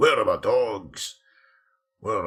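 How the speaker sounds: deep, loud fantasy-dwarf character voice. Voicing what an on-screen dwarf might be saying, in a dwarf voice. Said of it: "I do do a good dwarf voice".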